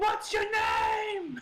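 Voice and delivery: very high called-out yell, name stretched out. Calling out in character to hidden agents: yelling out. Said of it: "I'm gonna yell out".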